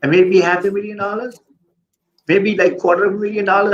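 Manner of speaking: sarcastic, way up high. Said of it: "I'm saying it sarcastically".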